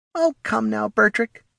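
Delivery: condescending, patronizing, very high-pitched voice. Morty answering Bertrick's scoff, patronizing. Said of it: "Morty said with a patronizing smile".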